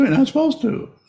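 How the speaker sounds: very high little squeaky voice. Describing meditation, the speaker voices a teacher answering a student; squeaky meditation-teacher voice. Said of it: "in probably the same squeaky voice".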